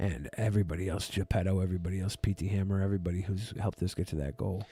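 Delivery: quiet, soft, low, drained voice.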